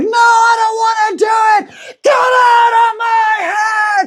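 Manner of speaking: very high-pitched, very slow, drawn-out shriek. Retelling a book scene where a character screams at a voice: imitating someone screaming. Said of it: "And she screams it".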